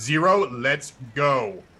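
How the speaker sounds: firm, authoritative, commanding tone, no room to argue. Player tells zero to go after he gets clocked in the face, commanding voice. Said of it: "I'm gonna use commanding voice to tell him".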